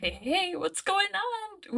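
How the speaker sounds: put-on very high, swooping, sing-song Valley Girl drawl. Voicing Cassie stepping forward to start a conversation, Cassie's Valley Girl accent. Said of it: "she had a Valley Girl accent".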